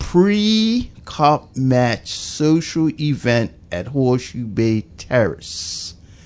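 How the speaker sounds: very slow, deliberate, spelled out word by word. Repeating event details for the people up west, saying it slowly. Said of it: "Let me just say that slowly".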